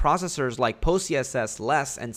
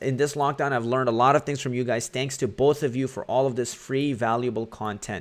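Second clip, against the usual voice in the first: normal talking voice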